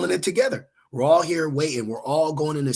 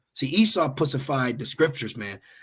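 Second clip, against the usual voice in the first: ordinary delivery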